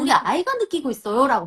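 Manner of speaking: ordinary delivery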